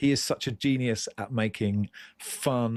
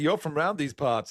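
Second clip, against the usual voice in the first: high, fake American cowboy Texan accent; 5 semitones higher than usual. Retelling what people said to him wherever he went, in a put-on American accent. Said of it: "They'd say".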